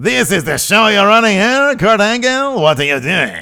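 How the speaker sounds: high, very loud, swooping yell. Retelling an annoyed wrestler's backstage line: better Maurice impression. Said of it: "that was a better Maurice right there".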